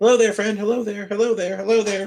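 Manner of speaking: very high, friendly calling out, over and over. Calling out a greeting to a gnome at the trailside: calling out to someone. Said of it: "start calling to him in gnomish".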